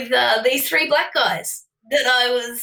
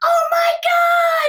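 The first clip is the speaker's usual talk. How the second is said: put-on shrill shriek, very high pitched; 4 dB louder than usual. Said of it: "screaming at the top of her, her lungs".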